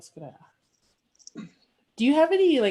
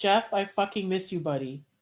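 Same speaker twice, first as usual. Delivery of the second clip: normal talking voice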